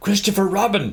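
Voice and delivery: stage whisper. Narrating the character calling down to Christopher Robin, loud whisper. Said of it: "he said in a loud whisper".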